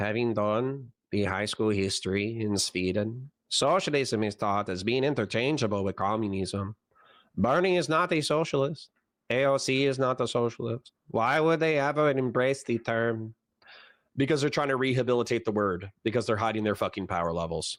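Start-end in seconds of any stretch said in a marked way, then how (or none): 0.0-6.7 drowsy, put-on Mexican accent. Speaker redoing their own sentence, in a sleepy mexican accent. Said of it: "I'll do the sleepy Mexican accent".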